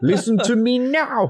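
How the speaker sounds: put-on South African accent.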